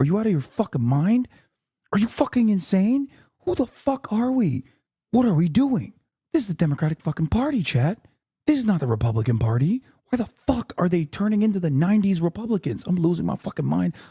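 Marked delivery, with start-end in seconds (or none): 3.4-13.9 screaming in a whisper, hushed. Ranting to chat while trying not to wake the neighbor, whisper-screaming. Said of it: "I have to whisper scream".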